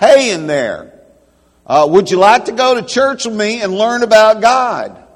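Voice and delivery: very loud, high-pitched shout. Telling a joke, a man leans close to the box: shouting into the box. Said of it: "and he shouts".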